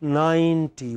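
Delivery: ninety, spread lips, long stressed first syllable. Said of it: "lips go from here to here".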